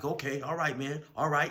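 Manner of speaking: upset. Retelling a young guy's reply after being shoved in the face, imitating upset speech. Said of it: "the young dude was obviously upset".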